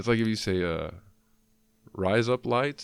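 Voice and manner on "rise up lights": "rise up lights" in Australian accent, pitched high. Showing how a phrase sounds said in an Australian accent. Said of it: "sounds like you're saying razor blades in Australian".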